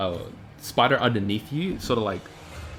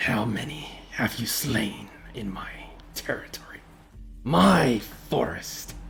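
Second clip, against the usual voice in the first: grating, rough, creaky voice of a giant spider. Voicing a voice the players hear, accusing them of killing its children: voice of the spider. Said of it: "you sort of all hear this voice".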